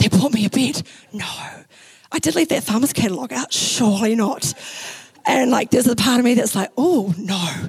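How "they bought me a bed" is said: whispered, hushed. Retelling finding a new bed in the room, voicing the thought in a whisper. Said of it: "maybe in your mind you like whisper".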